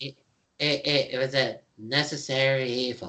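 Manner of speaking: put-on Canadian accent. Voicing a talking skull in a game: South Park Canadian voice. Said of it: "and I'll even do the voice".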